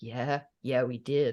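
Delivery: put-on smug, self-satisfied tone. Voicing a man in a picture whose face looks smug: imitating a smug man. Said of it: "I see his face as looking smug".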